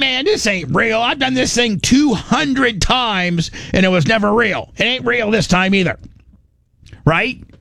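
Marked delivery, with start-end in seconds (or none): 0.0-6.0 high-pitched voice full of disbelief. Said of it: "You'd be like".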